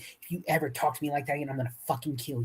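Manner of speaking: low, menacing, close half-whisper. Recounting a confrontation, the speaker imitates a woman who came up close, retelling a half-whisper. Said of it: "she whispers".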